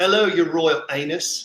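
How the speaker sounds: attempted put-on Cockney accent. Someone in chat wanted to hear it, so the speaker tries the Cockney accent. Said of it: "I try to do the Cockney accent".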